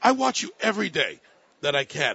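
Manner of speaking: put-on strong Chinese accent, laid on thick, sing-song. Retelling what one of the managers said on meeting him: heavy Chinese accent. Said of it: "with a heavy Chinese accent".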